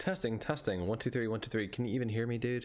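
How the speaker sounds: ordinary delivery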